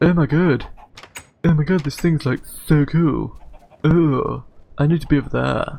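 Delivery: goofy put-on barnyard animal chattering voice. Describing escaped pigs and a cow, speaker voices them in a silly animal voice. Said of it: "I don't know what that voice was".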